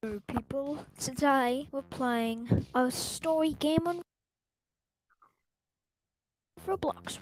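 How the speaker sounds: fake, put-on British accent. Opening a Roblox video, then noticing the accent: put-on British accent. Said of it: "Why am I talking like a British person?".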